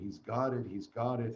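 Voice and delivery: ordinary talk, nothing marked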